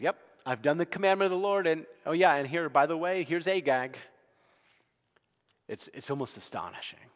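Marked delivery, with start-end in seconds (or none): 0.0-4.0 much higher, loud, brash and innocent-sounding. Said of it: "And he says".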